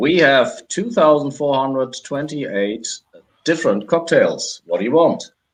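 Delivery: mechanical robotic voice, pitched a bit high. Voicing the barkeeper who answers the listener's character, in a robotic voice. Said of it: "addresses you with a robotic voice saying".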